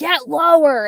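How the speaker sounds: loud, high-pitched yelling.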